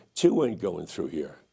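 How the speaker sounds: put-on brash, cocky, swaggering New York accent. Recounting answering his platoon leader under fire, retelling in cocky New York accent. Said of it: "like in my cocky accent from New York".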